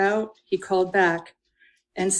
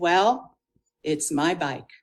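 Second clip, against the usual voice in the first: easy, unhurried, slow, drawn-out drawl; 3 semitones lower than usual. Retelling what Bill said over the bike engine, Bill's soft, slow drawl. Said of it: "in that soft, slow drawl".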